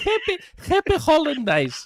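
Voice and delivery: put-on very high, sing-song, little old Greek lady voice. Reading out a listener's greeting: little old Greek lady voice. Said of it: "That's how little old Greek ladies talk English".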